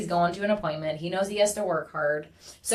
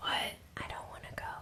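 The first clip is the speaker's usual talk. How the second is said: put-on soft, faint, shy whispered child's voice. Retelling how he, tired on Mondays, says he doesn't want to go, imitating his whisper. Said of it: "he'll whisper".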